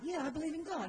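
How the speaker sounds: casual, put-on Australian accent. Retelling what a man with an italian accent said, using an australian accent. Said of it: "I'll just go Australian".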